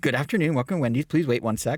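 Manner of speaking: acted-out happy, friendly, super chipper voice. Retelling a drive-thru greeting: imitating a super chipper voice. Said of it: "a super chipper, friendly guy".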